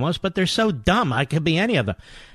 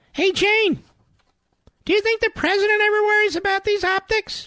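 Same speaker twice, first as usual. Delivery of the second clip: very high, squeaky cartoon-mouse voice. Mocking a played clip of Stelter's question: imitating Stelter like Minnie Mouse. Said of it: "He sounds like Mickey Mouse, or mo-, better yet, Minnie Mouse".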